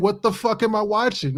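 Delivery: mock exasperated, annoyed outburst, high-pitched. Retelling reacting to an annoying film: imitating own loud yelling. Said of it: "I was saying it so loud".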